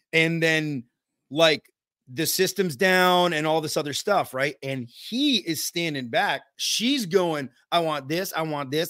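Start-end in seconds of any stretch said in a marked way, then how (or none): 7.7-8.9 mock sassy voice, quieter. Retelling a customer's demands during a home visit: imitating a sassy woman. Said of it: "she's all sassy".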